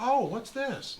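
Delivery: curious, high-pitched woman's voice.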